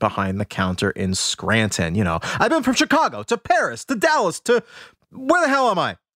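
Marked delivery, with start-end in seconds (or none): 2.2-5.9 very high pleading voice swinging up and down. Retelling a movie scene of pleading with a ticket agent: imitating Catherine O'Hara pleading. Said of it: "begging and pleading with the ticket agent".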